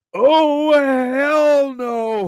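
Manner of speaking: mock very high, full-lunged bellowing shout. Retelling how the sergeant major reacted on walking into the chow hall, retelling a bellowing shout. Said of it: "bellows at the top of his lungs".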